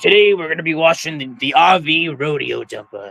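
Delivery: talking like a pirate. Recalling how a man introduced a video he was filming, in a pirate voice. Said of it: "talking in like his pirate voice".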